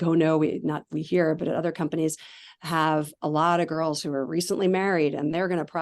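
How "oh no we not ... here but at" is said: ordinary delivery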